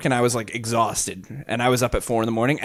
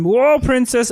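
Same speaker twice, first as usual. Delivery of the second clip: dim-witted cartoon guard voice; 11 semitones higher, 4 dB louder than usual. Acting out a character from Adventure Time, in a Banana Guard voice. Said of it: "I'm a banana guard".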